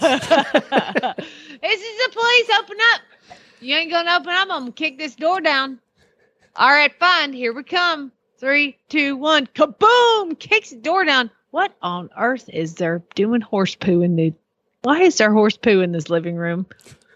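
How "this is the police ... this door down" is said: put-on Southern-accented police officer voice, pitched up. Co-telling a story, playing a police officer at a door: Southern police officer accent. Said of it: "Why do your police always have Southern accents".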